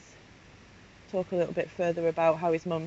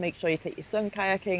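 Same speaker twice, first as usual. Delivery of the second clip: plain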